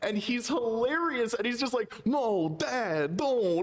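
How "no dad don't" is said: put-on halting, odd-cadence voice, higher. Retelling a movie son's lines: bad Christopher Walken impression. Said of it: "a bad Christopher Walken impression on purpose".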